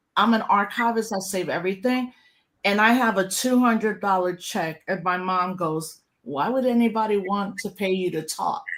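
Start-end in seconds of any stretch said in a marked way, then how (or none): 6.3-8.7 put-on, mock-loving, affectionate tone. Speaker retells her mom's question after an event, imitating mom's loving tone. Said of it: "But she said it very lovingly".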